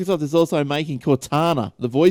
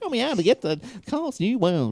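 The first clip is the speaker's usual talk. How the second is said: silly, dumb-sounding put-on voice, much higher; 5 semitones higher, 4 dB quieter than usual. Showing how he asks for directions so she gets it, in a real stupid voice. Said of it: "You should talk like that all the time".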